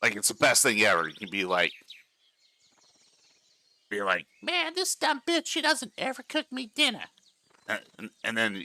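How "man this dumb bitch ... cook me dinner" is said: very high, squeaky talking-cat voice. Asked for an example, the speaker voices a pet cat in a cat voice. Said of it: "example of this cat voice?".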